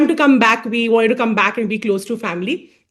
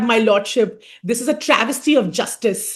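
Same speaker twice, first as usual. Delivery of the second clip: formal, declaiming senior courtroom advocate tone. Retelling what a senior advocate would say in court: imitating a senior advocate in court. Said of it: "she would say that".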